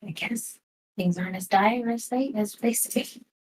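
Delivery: muttered, hushed half-whisper under the breath. Voicing a character muttering a remark under her breath: half-whispering under her breath. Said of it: "whisper under her breath".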